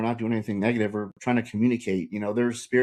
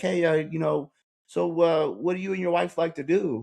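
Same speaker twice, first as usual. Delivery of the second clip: put-on keen, friendly, excited, pitched-up eager tone; 6 semitones higher than usual. Retelling a gym acquaintance's message to him, imitating someone excited. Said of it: "he was being all excited".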